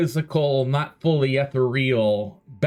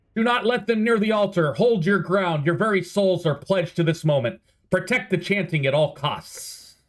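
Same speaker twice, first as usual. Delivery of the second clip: high, commanding, authoritative voice; 5 semitones higher than usual. Voicing a cultist who yells orders as the doors open: cultist yelling orders. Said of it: "he turns around and yells".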